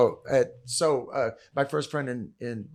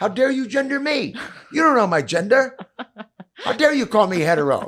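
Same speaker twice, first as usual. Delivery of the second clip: very high-pitched, shrill, raised yell; 10 semitones higher, 7 dB louder than usual. Retelling yelling back at the guy fighting him; retelling a yell. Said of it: "And I yell back".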